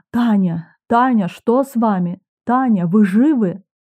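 plain reading voice

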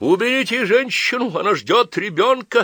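very high scream of horror. Polovinkin, remembering Varya is pregnant, yells in horror to those around. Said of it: "с ужасом вспомнил Половинкин и заорал".

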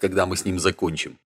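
plain

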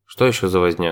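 ordinary delivery, nothing marked

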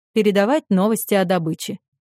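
ordinary delivery

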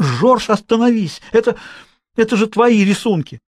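high, full-voiced, drawn-out shout. Grandmother Jeanne calls out to Georges to make him stop: shouting. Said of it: "она крикнула".

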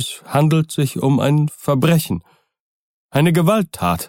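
quavering, barely steady voice. Poole answers Utterson, who has asked him what is wrong; trembling voice. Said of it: "sagte Poole mit bebender Stimme".

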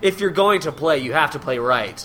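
plain

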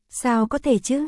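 plain

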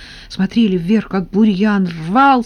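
plain

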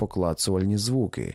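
ordinary delivery

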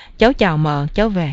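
plain

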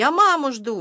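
desperate, crying out, shouting. Tamarochka, grabbed by the Doberman barber, shouts desperately. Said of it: "отчаянно крикнула Тамарочка".

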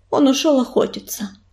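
ordinary delivery

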